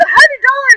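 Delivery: stunned, very high, loud disbelieving squeal.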